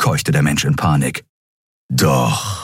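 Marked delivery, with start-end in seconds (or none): 1.9-2.7 growled, much lower. Keru answers the panicking man before knocking him out, growled. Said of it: "knurrte Keru".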